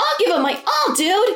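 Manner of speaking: very high, pitched-way-up little video-game creature voice. A voice actor quotes his own video game line as a Prinny: Prinny voice. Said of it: "if you hear a Prinny that says".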